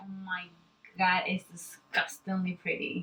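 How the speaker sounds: savoring, relishing a tasty bite. Reacting to a pretty makeup look, sounding like savoring a pizza slice. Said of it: "You sound like you're having a slice of pizza".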